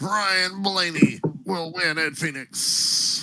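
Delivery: high race announcer voice. Showing a friendly listener your imitation a second time, do a Vince Welch impression. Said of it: "Here he comes".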